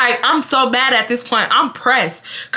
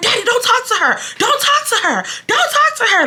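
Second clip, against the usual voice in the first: play-acted, high, dramatic screaming; 11 semitones higher than usual. Retelling own past argument, telling a dad to stay out: retelling own scream. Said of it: "I'm screaming".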